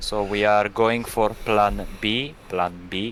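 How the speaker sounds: put-on Italian accent in English. Speaker shows off how good his Italian accent is, quoting a call: Italian accent. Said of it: "je suis très doué pour faire l'accent italien".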